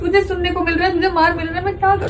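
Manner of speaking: crying while talking.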